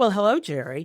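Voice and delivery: put-on sugary, sweetly polite, old-fashioned fifties-style friendly tone. Describing a character who greets someone she disdains, imitating a friendly 1950s voice. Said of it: "almost nineteen fifties like friendly voice".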